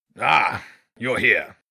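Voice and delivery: rough, gruff badger voice. An enormous badger greets Jenny from behind on the path: gruff voice. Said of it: "a gruff voice said".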